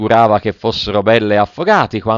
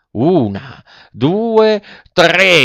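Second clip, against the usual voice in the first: high-pitched rallying puppet yell; 7 semitones higher than usual. The puppet, fleeing the assassins, counts before leaping a ditch, shouting. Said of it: "Gridò il burattino".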